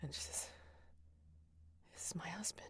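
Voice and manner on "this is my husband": high, very quiet, secretive vampire whisper. Playing a vampire character speaking only to one listener: vampire whisper. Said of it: "that vampire whisper that only you can hear".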